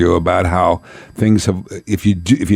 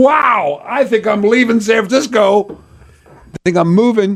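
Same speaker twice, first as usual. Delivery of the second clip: amazed thinking aloud, much higher pitch.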